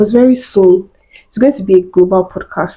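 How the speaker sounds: normal talking voice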